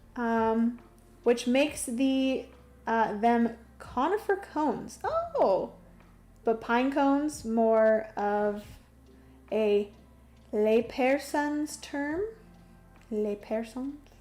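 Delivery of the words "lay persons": fake French accent, quieter. Reading a chat message aloud, one phrase in a put-on French accent. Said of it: "I don't know why I say that in a French accent".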